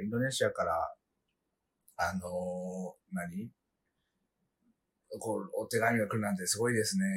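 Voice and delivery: wooden, deadpan, flat monotone reading with no inflection. Retelling what someone once said to him, imitating a flat monotone. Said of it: "なんか棒読みみたいな感じで".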